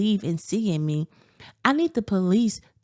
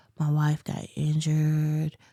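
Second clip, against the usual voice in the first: low, flat, emotionless, dead-level monotone; 4 semitones lower than usual. Imitating how a man sounded on his newscast: mock flat monotone. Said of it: "his voice very monotone. ... he was talking like this".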